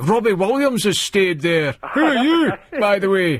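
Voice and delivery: put-on irate, rough Glaswegian accent. Retelling irate callers from Scotland: imitating an irate Glaswegian caller. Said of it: "that's real Glaswegian".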